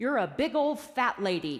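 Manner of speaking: loud, full-voiced put-on little boy voice. Parent retelling what their four-year-old son said, in Ian's very loud voice. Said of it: "said in a very loud voice".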